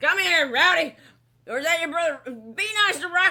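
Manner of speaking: loud, hollering dad voice. Picturing the father who named his sons Rowdy and Rocky: imitating the imagined dad. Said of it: "he's like".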